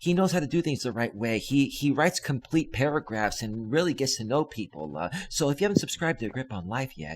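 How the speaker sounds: mock sorrowful, gentle, soft, low melancholy voice. Making fun of a channel host asking viewers to subscribe, mock-melancholy soft voice. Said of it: "You get like the melancholy voice".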